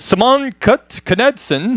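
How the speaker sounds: Swedish-accented pronunciation. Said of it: "he went from Southern to Swedish".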